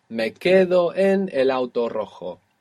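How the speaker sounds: ordinary delivery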